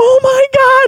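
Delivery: put-on very high, shrill, frantic, panicked shriek. Recounting a woman freaking out over a prank: imitating her full-lung scream. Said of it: "she's screaming at the top of her lungs".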